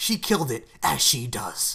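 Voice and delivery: mock emphatic, heavily stressed delivery. Teasing the other speaker by repeating their line: imitating an emphatic delivery. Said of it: "just the emphasis in your voice".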